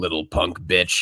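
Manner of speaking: deep, low, heavy growl. Quoting a line from a film he is in: Jeffrey Wright growl. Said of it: "his signature growl".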